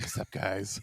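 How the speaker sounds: low, quiet snake voice. Imagining slithering into the room to greet everyone, like the Jungle Book snake. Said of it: "Like that snake from the fucking Jungle Book".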